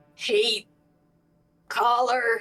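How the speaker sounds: croaked voice. Speaker voicing a character tugging at a cloak collar, croaking. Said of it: "he just croaks out".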